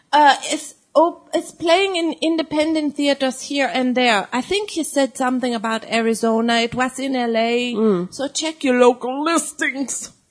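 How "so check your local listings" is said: sort of Chicago accent, put-on. Telling listeners where to see the film, Chicago-ish accent. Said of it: "So that was sort of a Chicago accent?".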